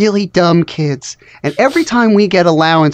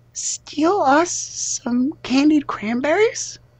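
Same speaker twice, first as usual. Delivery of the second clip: high, hushed whisper; 7 semitones higher, 8 dB quieter than usual. Voicing a kid who turns to the listener, whispering. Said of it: "and they whisper".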